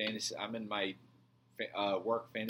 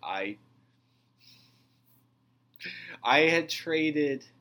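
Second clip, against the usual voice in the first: very loud, very slow, high, drawn-out laughing speech; 6 semitones higher, 9 dB louder than usual. Admitting a fantasy football trade to another speaker: laughing while talking. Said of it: "Why are you laughing when you".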